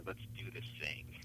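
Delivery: mock conspiratorial tone. Speaker quoting a woman's last words to them as they left, conspiratorial tone. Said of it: "in this sort of conspiratorial tone".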